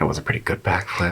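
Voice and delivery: grudging, low mumble under the breath. A game master voices a character in the scene: muttering to herself. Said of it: "she mutters to herself".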